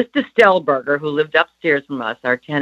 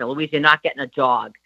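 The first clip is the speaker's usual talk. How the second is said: put-on Boston accent. Retelling how mother refused a dog, imitating mother's Boston accent. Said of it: "in her Boston accent".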